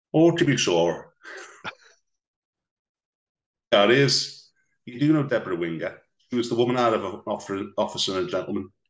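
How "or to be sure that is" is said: loud, very slow, drawn-out West Belfast accent. Answering a request to do the accent, in a West Belfast accent. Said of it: "Do your West Belfast accent".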